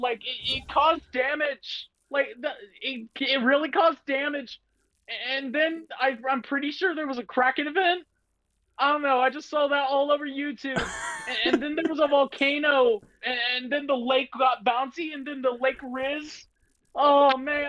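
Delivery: squeaky stammering cartoon voice, pitched very high. Challenged to explain a storyline within sixty seconds, in a Morty voice. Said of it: "but to do it in a Morty accent".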